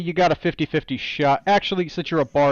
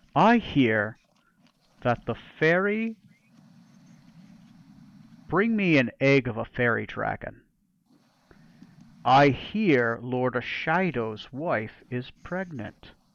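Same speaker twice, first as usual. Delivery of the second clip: half-whisper, very slow and drawn out; 4 semitones lower, 5 dB quieter than usual. Voicing a character who leans closer to a player: half-whispering in character. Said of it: "He's gonna get a little bit closer to you and whisper".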